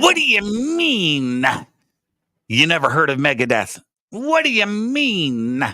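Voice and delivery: mean stretched out with pitch swinging high. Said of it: "my best [name] impersonation".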